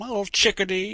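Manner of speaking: high, loud, belted, flirty delivery. Retelling a character's flirting line to a woman: W.C. Fields impression. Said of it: "W C Fields impression".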